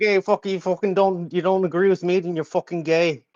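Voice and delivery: put-on likeable Irish accent. Imitating a debate opponent he once defeated: Teriak's Irish accent. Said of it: "got that Irish accent, he's like".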